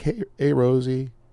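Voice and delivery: weepy voice, speaking through tears. Retelling a call from a producer who was in tears, imitating Owen crying. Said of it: "are you are you crying?".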